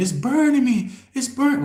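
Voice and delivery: shrill, very high, loud scream, cut off. Retelling how a woman being held down kept screaming: imitating someone screaming. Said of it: "she just kept screaming".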